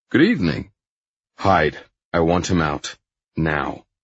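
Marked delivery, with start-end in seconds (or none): none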